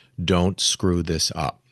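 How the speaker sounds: whispered, low voice. Retelling flipping a new album, the speaker whispers to the artist: retelling a whisper. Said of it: "I am whispering to the artist".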